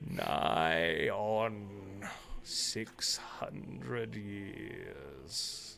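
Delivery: deep, gravelly, broken voice. Game master voicing a creature of many joined voices addressing the players, deep, gravelly, broken voice. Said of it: "deep, gravelly, broken sort of voice that says to you".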